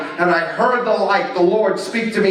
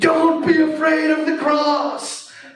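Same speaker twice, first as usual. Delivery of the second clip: high, full-throated yell at top of voice; 8 semitones higher than usual. A speaker recounts what they cried out in that moment, retelling a yell at top of voice. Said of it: "I'm yelling out at the top of my voice".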